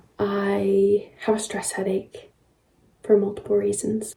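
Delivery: slow, hushed whisper. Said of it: "I have to be quiet because George is sleeping".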